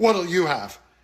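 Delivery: scornful, dismissive, contemptuous sneering tone. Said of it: "sneers, and says ... In just that kind of tone".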